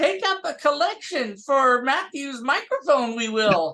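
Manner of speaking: put-on high-pitched, old wise-creature voice. Asked for [name]'s parting thoughts, the speaker answers as Yoda: Yoda voice. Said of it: "Why am I talking like Yoda".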